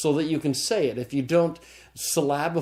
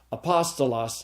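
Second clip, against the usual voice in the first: apostolos said with the accent moved to a new syllable. Showing how stress changes a word's sound, say apostolos with shifted stress. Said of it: "depending upon what syllable I accent".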